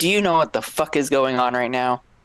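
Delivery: enraged angry outburst, fast and furious. Speaking as Axel on a phone call to Elliot, furious. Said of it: "Axel would be kind of furious".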